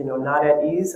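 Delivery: AT leaned on with a rising tune.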